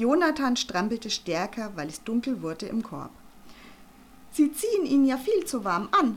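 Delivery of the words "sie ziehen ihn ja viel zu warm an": raised, high-pitched, reproachful scolding tone. A woman peering into a baby's pram, scolding. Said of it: "rügte Frau Panzer".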